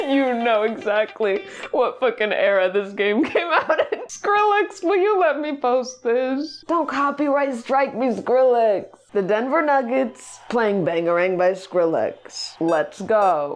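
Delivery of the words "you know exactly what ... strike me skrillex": talking while cracking up with laughter. Streamer playing a game on stream, laughing.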